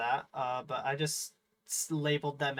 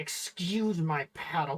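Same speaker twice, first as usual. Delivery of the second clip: put-on delivery through clenched teeth; 2 semitones higher than usual. Retelling a scene, the speaker quotes Anakin, imitating him through gritted teeth. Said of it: "he's like gritting his teeth".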